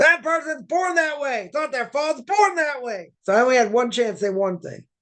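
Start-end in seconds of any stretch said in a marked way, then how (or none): 0.0-3.1 mock high, insistent yelling, repeated over and over. Retelling what someone kept yelling: imitating someone yelling. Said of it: "like a broken record".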